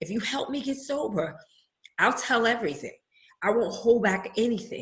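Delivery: moved, emotional, feeling audibly welling up. Speaker repeats the prayer they once made to God, getting emotional. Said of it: "I'm getting emotional".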